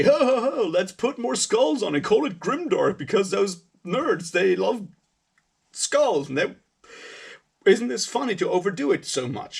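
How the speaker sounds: bad British accent. Explaining a parody, quoting english punks in a bad british accent. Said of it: "I can't do a British accent".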